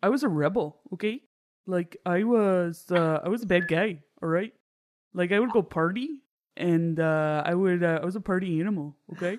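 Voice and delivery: very slow, drawn-out grandpa voice. Doing an impression of a friend's grandfather bragging: imitating her grandfather. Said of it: "I do an impression of her grandfather".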